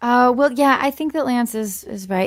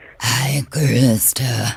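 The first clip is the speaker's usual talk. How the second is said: put-on demonic voice; 10 semitones lower than usual. Asked by a guest to say her name: House Bunny satanic voice. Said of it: "will you say my name in the satanic voice".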